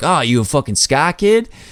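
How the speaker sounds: put-on Boston local's accent. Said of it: "he's talking in a Boston accent".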